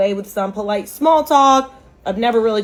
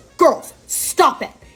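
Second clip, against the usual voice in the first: stern, strict, no-nonsense scolding tone; 3 semitones higher than usual. Retelling how an older woman scolded two sisters: imitating a disciplinarian tone. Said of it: "in a super, like, disciplinarian tone".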